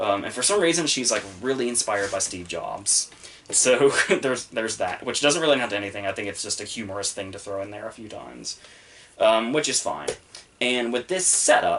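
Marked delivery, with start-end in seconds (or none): 11.3-11.8 emphasis on "setup". Discussing a story's characters, the speaker is stressing the word 'setup'. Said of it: "I stress the word setup".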